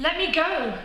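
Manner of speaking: put-on very high-pitched, pleading child voice.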